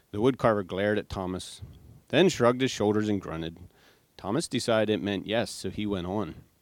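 plain

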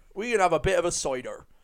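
Cornish farmer accent. Describing a farmer character from early episodes, Cornish farmer accent. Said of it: "like a Cornish accent, farmery kind of guy".

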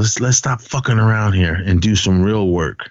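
normal talking voice

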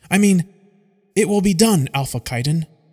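firm, soldierly delivery. After a nervous reply, a young woman answers the alpha in a more militant voice. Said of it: "musters up a more militant voice".

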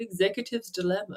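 slightly posh, upper-crust put-on voice. Saying a title named by ChatGPT, in a bit of a posh voice. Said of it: "I also always have to say it in a bit of a posh voice".

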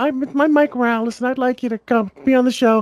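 very high, piping pitchman voice. Imagining a guy inviting someone onto the show, the speaker does a high-pitched Mike Raul voice. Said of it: "High pitched".

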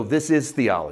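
seething, riled-up, fuming angry tone. Imitating listeners whose blood is boiling: imitating fuming listeners. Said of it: "they're fuming because they go".

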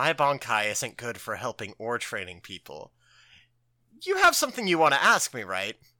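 grave, low, very solemn delivery. Recapping an anime scene where Urahara answers Renji, mock-solemn Urahara line. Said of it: "Urahara just like very solemnly says".

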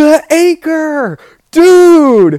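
very high, loud, shrill yell with dude drawn out. Recounting a whale sighting on a boat, the speaker retells being yelled at: retelling a yell. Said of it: "Matt yelled at me".

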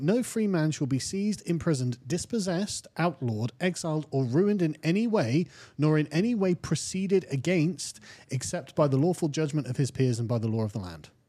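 usual speaking voice

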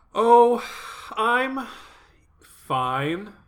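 high, transparently false, unconvincing reassuring tone. Podcast co-host, asked how she's doing, answering unconvincingly that she's fine. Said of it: "She said in a tone of voice that indicated that that was a lie".

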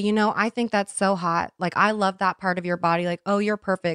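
ordinary talk, nothing marked

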